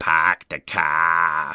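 strong put-on Boston accent, "car" drawn out. Introducing a story set in Charlestown, Boston, with a wicked Boston accent. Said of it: "I get to bust out my wicked Boston accent".

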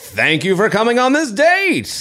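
swooping, high game show host delivery. Trying out different voices for one line, game show host voice. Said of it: "That's more like game show host".

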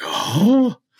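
high, loud, excited blurted oh. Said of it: "And you're like".

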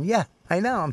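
acted, half-laughing, snickering offhand tone. Retelling how someone answered while being yelled at: imitating someone snickering. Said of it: "he's just snickering at me".

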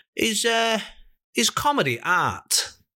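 put-on slow, drawn-out Manchester accent. Retelling what a passing man said to them: imitating a Mancunian accent. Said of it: "like real Mancunian".

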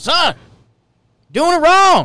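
high, loud angry dad yell. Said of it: "Dad comes out with the angry yell".

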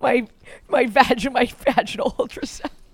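talking through heavy laughter, words drawn out. Talking with another speaker, laughing hard while talking. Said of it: "I'm laughing so hard right now".

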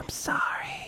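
soft, breathy whisper. Speaker apologizes to new listeners: whispering into your ear. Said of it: "I'm going to whisper into your ear".

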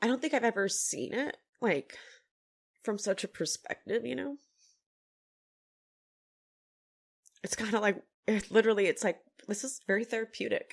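crying through the words. A show cast member talks about a friendship, crying while talking. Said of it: "I cannot believe I'm fucking crying over this".

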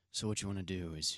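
very low, hushed, put-on seductive bedroom voice. Explaining how to kiss, the speaker puts on a seductive voice. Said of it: "let me put on a seductive voice".

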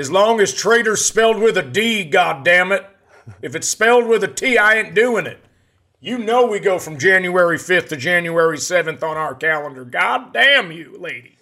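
put-on Kentucky country accent, loud and high. Impersonating a man from Kentucky answering his wife, in a Kentucky man impersonation. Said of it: "my impersonation of a guy coming up from Kentucky".

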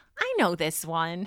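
knowing, slow, drawn-out mom voice.

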